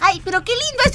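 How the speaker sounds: put-on high little girl voice, childlike.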